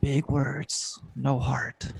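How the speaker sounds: slow mumbling under breath. A man digging a grave glances at a fancy woman, mumbling to himself. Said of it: "he just mumbles to himself".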